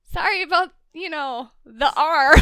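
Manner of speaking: normal talking voice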